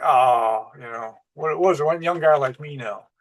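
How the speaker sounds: acted-out scornful, derisive scoffing tone. Retelling his reply to a warning about new bosses: imitating a scoff. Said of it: "he scoffed at me".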